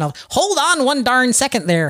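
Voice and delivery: Midwestern-sounding voice. Speaker slips into a Midwestern accent while telling Adam to wait. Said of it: "I don't know why I'm being Midwestern".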